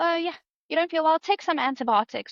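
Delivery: casual, offhand, high, quick, breezy South African voice.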